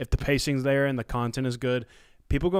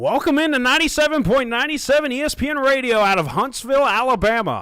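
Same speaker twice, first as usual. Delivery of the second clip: very high, loud, manufactured radio host voice; 12 semitones higher, 7 dB louder than usual. Asked by a co-host to put on one of the young radio host voices, radio announcer voice. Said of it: "Can you put one of these voices?".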